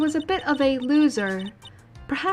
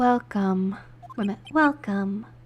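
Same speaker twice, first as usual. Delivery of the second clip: creepy, eerie voice, pitched lower; 4 semitones lower than usual. A character greeting a visitor, creepy voice. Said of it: "Talk about a creepy voice".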